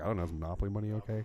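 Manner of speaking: muttered under breath, murmured. Speaker retells what they said to their mom after a drink order, muttered under breath. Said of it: "under my breath to my mom".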